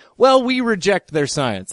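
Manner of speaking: ordinary talk, nothing marked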